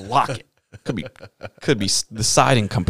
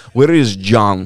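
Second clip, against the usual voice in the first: put-on loud, thick, heavy Eastern European accent; 5 dB louder than usual. Retelling two big guys demanding to know where John is, thick Eastern European accent. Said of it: "very thick. You know, Eastern European accent".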